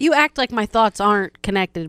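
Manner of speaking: ordinary talk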